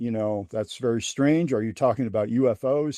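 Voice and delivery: ordinary talk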